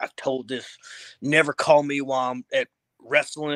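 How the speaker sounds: play-acted, really mad, swearing, cussing rant. Retelling someone cussing when his phone rang at a show: imitating Ricky really mad. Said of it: "really mad".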